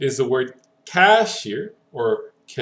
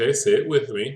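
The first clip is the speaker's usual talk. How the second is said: normal talking voice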